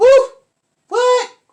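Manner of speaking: high, loud, shocked exclamation.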